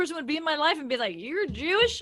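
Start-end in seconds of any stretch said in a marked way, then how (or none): 1.2-2.0 put-on Southern accent. Imagining how a person would react to the speaker, in a put-on Southern accent. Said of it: "I don't know why I gave her a Southern accent".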